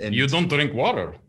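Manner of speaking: put-on Estonian-style, general Eastern European accent. Describing Estonians' drinking habits, in an Estonian-style accent. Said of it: "the general accent that I just used".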